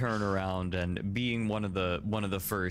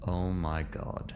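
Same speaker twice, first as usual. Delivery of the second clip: quiet mumbling under the breath. Voicing a character reacting to a room: muttered under his breath. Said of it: "say under his breath".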